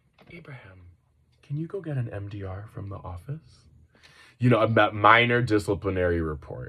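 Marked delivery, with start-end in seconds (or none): 0.3-3.6 calm, unhurried, very quiet half-whisper. Recalling what a man said to him in class, retelling a calm near-half-whisper. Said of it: "almost in a whisper".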